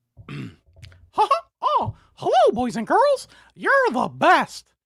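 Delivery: very high, loud, swooping voice. Explaining that you must fully commit to the voice: high-pitched Mickey Mouse voice. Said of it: "high pitch".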